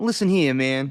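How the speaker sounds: put-on old-school Italian accent. Co-host mimics the voice being described, in an old school italian voice. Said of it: "like an old school Italian".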